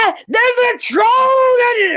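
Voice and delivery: high, slow, terrified shriek. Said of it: "I was too busy screaming".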